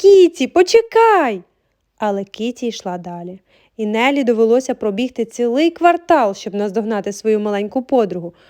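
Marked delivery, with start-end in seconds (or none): 0.0-1.4 shrill, very loud, high shout. A girl runs out of the house after her small friend, shouting. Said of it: "крикнула вона".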